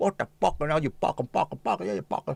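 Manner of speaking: creaky, chicken-like, clucked-out voice. Showing how someone swears, sounding like a chicken. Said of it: "you wanna sound like a chicken at times".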